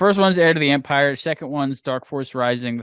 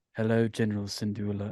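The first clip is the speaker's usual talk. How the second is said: quiet, soft, menacing hush; 3 semitones lower, 9 dB quieter than usual. Showing how they read Thrawn's lines like the actor, greeting the general: quiet menacing Thrawn voice. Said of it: "quiet, like menacing voice".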